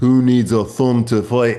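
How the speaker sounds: put-on Irish brogue. Retelling a man's answer about fighting without a thumb, in an irish accent. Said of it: "או במבטא העירי".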